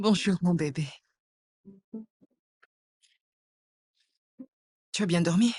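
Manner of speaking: crying while talking. Greeting a child in the morning after a quarrel, crying while talking. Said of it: "Pourquoi est-ce que tu pleures ?".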